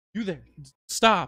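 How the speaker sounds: delicate, dainty, high little yell. A game master voices an unseen figure calling out to the players: dainty yell. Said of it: "daintily yell out".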